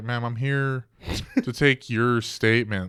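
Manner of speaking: put-on fed-up, exasperated tone. Retelling how a cop answered a screaming woman: imitating a fed-up cop. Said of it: "the cop was just so done with the interaction".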